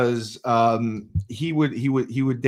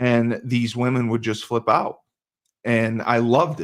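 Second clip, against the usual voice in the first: normal talking voice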